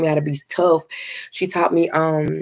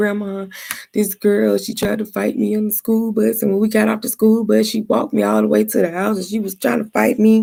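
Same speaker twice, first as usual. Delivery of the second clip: sobbing, teary, pitched-up crying voice; 5 semitones higher than usual. Retelling telling grandma about a girl on the school bus: imitating own past crying.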